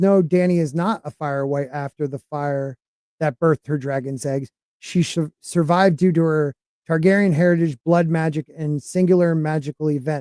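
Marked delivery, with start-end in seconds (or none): none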